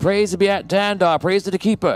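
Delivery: high, shouted crowd-style cheering. Voicing monks in the streets who recognize the party: shouting praise as a crowd. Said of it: "they start, uh, shouting".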